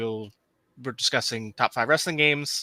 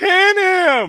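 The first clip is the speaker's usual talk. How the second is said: put-on wrestling commentator yell, higher and louder; 10 dB louder than usual. Quoting a wrestling game's commentary at home: yelling in Vince McMahon voice. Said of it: "in that, uh, uh, esoteric Vince McMahon voice".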